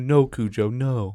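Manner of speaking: gentle, mild, unforceful reproving tone. Retelling how a friend tells off her jumping dog, soft voice. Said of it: "Like in the soft voice".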